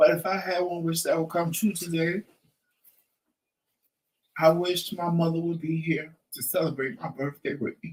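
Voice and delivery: voice catching, choked-up, on the edge of crying. Answering a birthday question about one wish, near tears. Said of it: "And I want to cry".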